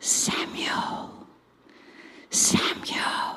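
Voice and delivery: soft whispered call of the name. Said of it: "I think I'll do it as a whisper this time".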